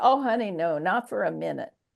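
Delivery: put-on drawling voice. Quoting a woman's answer to the speaker, imitating her drawl. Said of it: "that draw".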